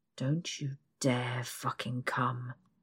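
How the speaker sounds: growled, gruff delivery. A man speaks to the narrator on the bed, growling. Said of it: "he growls".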